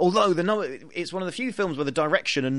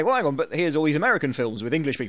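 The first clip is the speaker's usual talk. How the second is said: ordinary delivery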